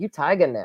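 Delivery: normal talking voice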